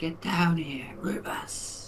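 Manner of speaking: high-pitched stage whisper. Calling a companion over while a monster is nearby, whispering. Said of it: "I'm whispering".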